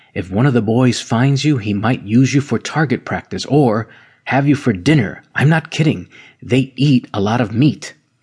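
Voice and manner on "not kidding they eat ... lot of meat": ordinary delivery, nothing marked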